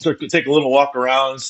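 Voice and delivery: normal talking voice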